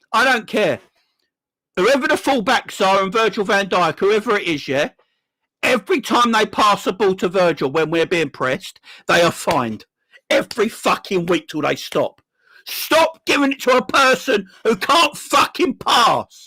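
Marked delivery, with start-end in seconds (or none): 10.2-16.2 angry, mad tone, sometimes slower. Demanding fines for passing the ball to Virgil when pressed, sound mad. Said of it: "Drives me mad".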